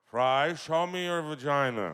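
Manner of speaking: very loud, high-pitched, belted cartoon voice. Acting out a pitched joke where Zoidberg speaks to Fry: Zoidberg voice. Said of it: "That Zoidberg voice saying that V word".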